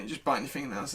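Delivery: ordinary delivery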